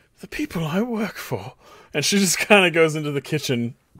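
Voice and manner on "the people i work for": soft, pitched-up muttering under the breath. Narrator voicing Gwen as she walks past, muttering under her breath. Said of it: "kind of mutter under her breath".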